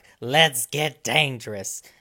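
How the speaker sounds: dropped low, heroic voice. Recalling an end-credits scene with excitement, in a Darkwing Duck impression. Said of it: "I'm done with the impressions".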